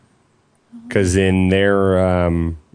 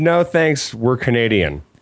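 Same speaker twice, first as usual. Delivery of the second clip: ordinary talk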